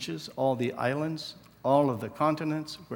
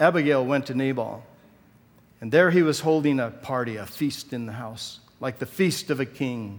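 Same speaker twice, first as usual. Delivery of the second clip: plain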